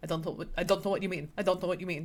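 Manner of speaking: put-on Russian accent. Retelling how a character dodges a partner's questions: Ilya Russian accent. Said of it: "I also just love your Russian accent today".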